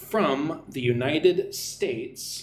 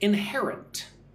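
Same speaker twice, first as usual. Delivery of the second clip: inherent stressed on -her-, in-HER-ent; 5 semitones higher than usual. Teaching word stress, saying inherent with stress on the second syllable. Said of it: "Stress goes on the second syllable again".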